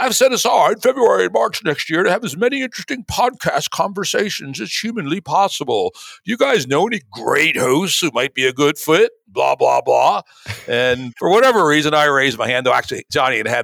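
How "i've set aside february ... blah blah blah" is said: put-on British accent, pitched up. Reading aloud a guest's tweet: British accent imitating Johnny. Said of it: "I appreciate the, the British accent there".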